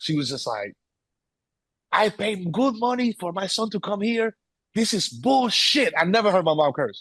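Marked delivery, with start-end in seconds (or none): 1.9-5.9 put-on accent of the Dominican Republic. Retelling mom confronting the school over her son: imitating mom's thick accent. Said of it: "with her thick ass accent".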